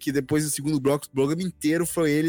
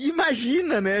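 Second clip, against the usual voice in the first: light, playful, jokey tone, pitched up; 10 semitones higher than usual. Retelling her reply when she thought it was a prank, retelling a playful joking reply. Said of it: "Já brinca".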